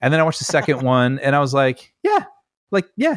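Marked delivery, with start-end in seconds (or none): 2.0-3.2 squeaky, pitched-up "yeah", very high. Retelling their reaction to the Hobbit movies, in a high-pitched reaction. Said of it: "Your your your voice got more high pitched with each one".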